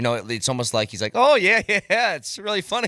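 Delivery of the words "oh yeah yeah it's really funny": dry sarcasm, falsely amused, real anger underneath. Podcast co-host mimicking the coach when he is angry, imitating Jared Bednar smiling. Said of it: "he says it with a smile on his face".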